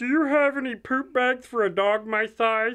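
high, mocking put-on voice of a big dog. Retelling what a big dog asked in the store, in a mocking voice. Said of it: "*mocking voice*".

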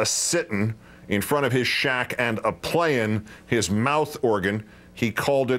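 plain

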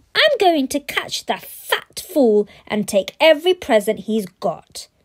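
loud, high snarling delivery. Narrator reading Bradley's reply to his father, snarling. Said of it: "snarled Bradley".

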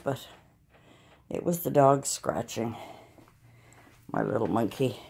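out of breath. Speaker has just run in from the living room, talking to listeners, out of breath. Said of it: "I'm out of breath because I ran in here".

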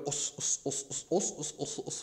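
whispered, very slow, breathy, drawn-out bad Japanese accent. Describing a fight, the speaker imitates the Taekwondo fighter in a bad Japanese accent impression. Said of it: "bad impression of Japanese people".

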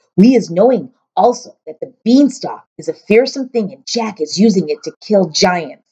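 ordinary delivery

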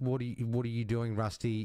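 ordinary delivery

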